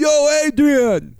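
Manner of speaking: high-pitched, bawling yell. Recalling a movie's iconic ending, the speaker does a Rocky yelling impression. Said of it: "He's bawling, yelling out".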